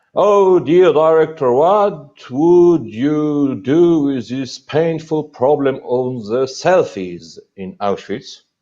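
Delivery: mocking concerned tone, high and slow. Director quoting a politician's question during a discussion: mocking concerned tone. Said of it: "[mocking concerned tone]".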